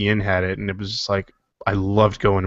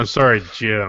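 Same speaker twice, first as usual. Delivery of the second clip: mock disdainful, scornful voice. Repeating another speaker's line back to them: imitating a disdainful tone. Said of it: "such disdain in your voice when you said that".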